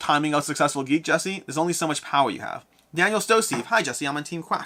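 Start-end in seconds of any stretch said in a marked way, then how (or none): none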